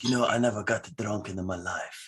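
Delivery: put-on thick, heavy Italian accent, laid on. Retelling what their dad said during a talk about moonshine, in heavy Italian accent. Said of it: "in his heavy Italian accent".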